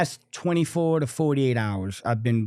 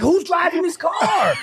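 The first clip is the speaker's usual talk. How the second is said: weepy, tearful, pitched-up crying voice; 5 dB louder than usual. Retelling a mother's reaction in a driverless car, imitating her crying. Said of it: "there's a video of her crying".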